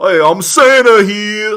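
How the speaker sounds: put-on very high, very loud, shrill, booming New York accent. Acting out the accused in the case: New York Santa voice. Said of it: "a New York Santa".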